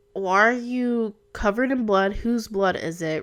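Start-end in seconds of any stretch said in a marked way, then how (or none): none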